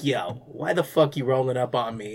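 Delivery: low, irritated, fed-up, annoyed grumble. Act out the man confronting someone from his car before closing the door, imitating someone mad and annoyed. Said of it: "you can tell he's just like mad annoyed".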